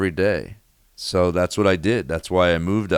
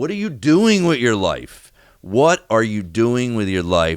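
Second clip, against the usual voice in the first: mock yelling out loud, crying; 4 semitones higher than usual. Recalling punching the steering wheel alone in anger: retelling a yell. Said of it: "where I'm yelling out loud and I'm alone".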